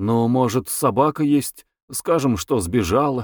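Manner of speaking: ordinary delivery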